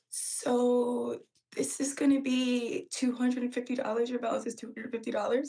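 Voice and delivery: put-on trembling, scared, small, nervous delivery. Retelling telling a client her total: imitating a shaky nervous voice. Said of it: "I said it with the shakiest voice".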